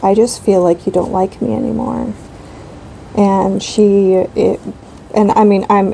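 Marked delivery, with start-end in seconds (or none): none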